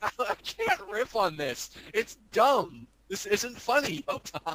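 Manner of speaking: talking through helpless laughter, high and swooping. Telling the other speaker the bit is not funny, laughing while talking. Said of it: "You're laughing as you're saying it's not funny".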